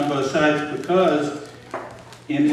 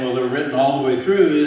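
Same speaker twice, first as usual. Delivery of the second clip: ordinary talk, nothing marked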